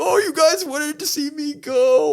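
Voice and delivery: very high, slow, drawn-out fake sobbing. Act out the Miz on the mic, looking at the crowd, imitating The Miz fake crying. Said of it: "He starts fake crying".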